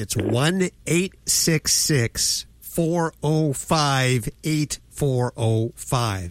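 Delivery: slow, careful, deliberate speech. Repeating a phone number once more for listeners, nice and slow. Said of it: "nice and slow for everybody".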